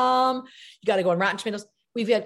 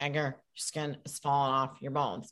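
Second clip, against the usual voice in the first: low, soft, expressionless put-on girl voice. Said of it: "an imitation of someone I knew from Syracuse".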